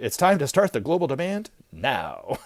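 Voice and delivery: bad, weak announcer voice. You put in the missing word for the listener: pathetic movie phone guy impression. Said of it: "pathetic attempt at trying to sound like the movie phone guy".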